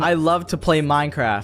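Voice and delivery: normal talking voice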